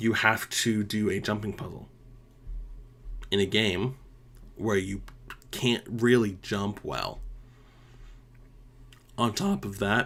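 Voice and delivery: voice cracking, breaking on the words. A video creator criticizes a game boss fight, voice cracking. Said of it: "sorry for my voice crack".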